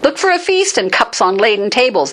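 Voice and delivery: high-pitched, sarcastic, scornful taunting tone. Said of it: "he's using sarcasm".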